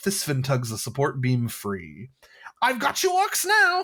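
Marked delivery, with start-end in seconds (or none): 2.6-3.8 chortling with insane glee, higher and louder. Reading a module scene where a character traps orcs: chortling with insane glee. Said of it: "Thysfin chortles with insane glee".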